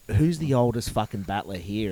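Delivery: ordinary delivery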